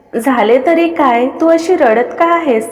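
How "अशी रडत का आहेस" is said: ordinary delivery, nothing marked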